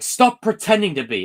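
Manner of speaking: put-on shrill, very high, loud screaming. Retelling a film scene: imitating Peter Parker screaming. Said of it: "when Peter screams at Uncle Ben".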